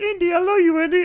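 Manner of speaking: very high, shrill, very loud crying wail. Retelling a movie scene where Short Round cries, imitating Short Round crying. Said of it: "crying, like".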